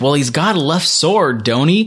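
put-on American Southern accent. Retelling an old man's line from the episode: imitating a southern accent. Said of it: "here I actually think there was a Southern accent".

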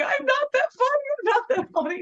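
mock, very high, shrill scream, repeated over and over. Retelling what was screamed at someone who could not stop laughing: retelling a scream. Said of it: "I just kept screaming".

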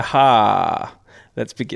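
heavy, put-on sarcasm with drawn-out aha. Starting to talk after another speaker says make us believe: put-on sarcastic tone. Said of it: "Was that sarcastic enough?".

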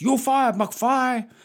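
very high, loud movie-boss voice. Quoting Marty McFly's boss in Back to the Future 2: impression of McFly's Japanese boss. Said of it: "I'm just doing an impression of the actor in the film".

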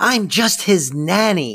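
mock high, drawn-out, exasperated screaming outburst. Recounting a scene where Fran screams at Val: imitating Fran's frustrated scream. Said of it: "Fran frustratingly screaming at Val".

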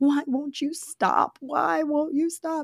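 high, slow sobbing, crying through every word. Retelling a scene where Pooh approaches with a knife, imitating Christopher sobbing. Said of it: "The whole time he's sobbing".

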